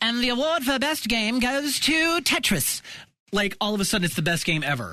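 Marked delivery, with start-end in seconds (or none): 0.0-2.8 terrible fake British accent, high and slow. Joking in a conversation about bad games, in a put-on British accent. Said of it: "that was the most amazing British accent ever".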